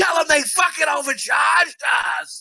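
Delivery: very high, shrill, ratty yelling. Imitating a wife heard yelling in the background of a phone call: imitating a ratty wife yelling in the background. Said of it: "that ratty wife in the background".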